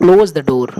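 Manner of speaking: falling pitch on door. Teaching English intonation, say close the door with falling tone on door. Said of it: "र तक पहुंचते तक मेरा पूरा voice down हो जा रहा है, फेलिंग टोन आ रहा है".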